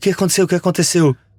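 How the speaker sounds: startled, alarmed, just-woken voice. Retelling a friend waking up suddenly: imitating a startled voice. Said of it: "ele acordou assustado".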